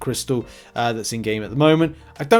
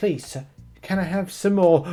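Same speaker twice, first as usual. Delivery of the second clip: put-on boy voice, much higher; 3 semitones higher than usual. Complaining about a game company, the speaker acts out Oliver Twist asking for more. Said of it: "You feel like Oliver, in Oliver Twist, where he's like".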